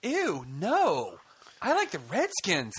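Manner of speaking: put-on scornful child's voice, very slow, swooping, disgusted. Retelling his son's reply to a man handing out candy, imitating son's disgust. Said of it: "my son looked at him with disgust and disdain".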